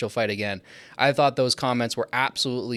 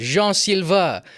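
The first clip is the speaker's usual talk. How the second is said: name pronounced the French way, pitched up; 7 semitones higher, 4 dB louder than usual. Saying a fighter's name the French way: French pronunciation of the name. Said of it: "if you pronounce it in French".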